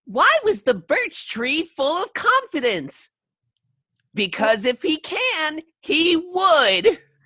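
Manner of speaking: very high, funny skeleton character voice. Telling a joke in a skeleton voice. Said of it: "this this skeleton voice".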